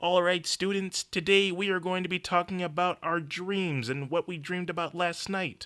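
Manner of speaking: high felt-frog puppet character voice. Telling a story where the teacher addresses his students: Kermit the Frog voice. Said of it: "And Kermit the Frog says".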